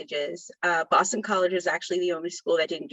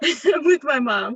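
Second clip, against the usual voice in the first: laughing while talking, higher and louder; 9 semitones higher, 6 dB louder than usual. Speaker explains an interruption in the middle of an answer, laughing.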